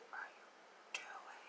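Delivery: whispering, scolding tone.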